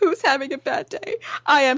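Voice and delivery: weepy, tearful voice laden with sobs. Retelling a woman crying on her Instagram story, imitating someone crying. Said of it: "she's crying".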